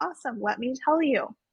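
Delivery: normal talking voice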